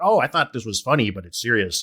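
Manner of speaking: ordinary talk, nothing marked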